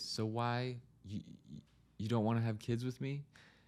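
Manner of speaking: mock sorrowful, very sad, plaintive, hurt-sounding voice. Podcaster imagining his fiancée's question to him, imitating a very sad voice. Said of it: "ask me in a very sad voice".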